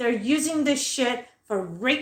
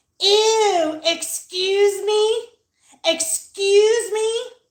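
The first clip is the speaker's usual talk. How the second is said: very slow, raised woman's voice, stretched-out "ew"; 8 semitones higher, 5 dB louder than usual. Retelling how a woman reacted when they walked by: imitating a woman. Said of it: "She goes like this".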